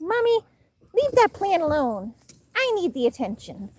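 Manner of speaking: put-on, high, swooping pet-talk voice. Describing a pet pouncing for attention, the speaker does Lucky's voice. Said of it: "That's kind of Lucky's voice".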